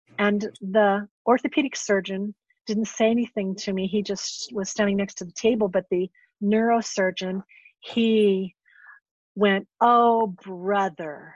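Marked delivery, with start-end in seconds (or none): 9.8-11.2 imitated sarcastic tone. Retelling what the neurosurgeon said beside the table, imitating a sarcastic tone. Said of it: "really sarcastically".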